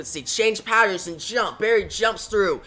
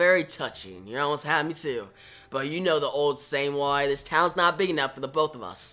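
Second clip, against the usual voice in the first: ordinary delivery, nothing marked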